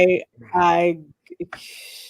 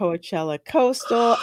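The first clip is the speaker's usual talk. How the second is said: normal talking voice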